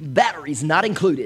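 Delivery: cool, commercial-style DJ announcer voiceover voice. Recalling old toy commercials: cool DJ announcer voice. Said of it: "that cool D J voice guy who goes".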